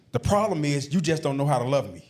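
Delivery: ordinary talk, nothing marked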